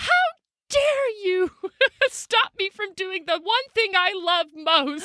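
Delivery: put-on enraged tirade, very high and shrill. Retelling how grandma reacted to being stopped from cleaning: imitating grandma's rage. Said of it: "She went into a rage".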